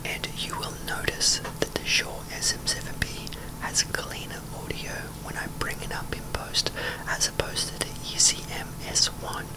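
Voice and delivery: soft whisper, close to the mic. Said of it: "I am literally whispering right now".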